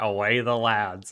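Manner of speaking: put-on southern American accent. Retelling a clip of Jimmy Carter addressing a football team: Jimmy Carter southern accent. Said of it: "him in a southern accent saying".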